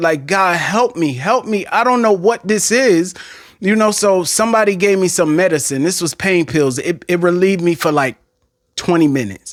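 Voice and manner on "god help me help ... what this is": put-on tearful, crying-out voice. Retelling a night of pain on the floor: imitating crying out to God. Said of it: "that's how I was crying to the Lord".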